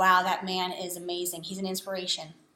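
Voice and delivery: ordinary talk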